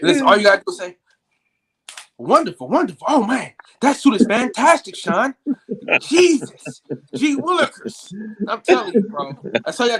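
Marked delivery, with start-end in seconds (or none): 2.2-8.1 polished put-on voice, pitched up, slow.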